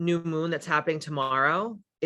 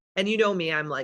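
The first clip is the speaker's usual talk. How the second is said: usual speaking voice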